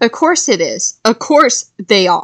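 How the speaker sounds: plain reading voice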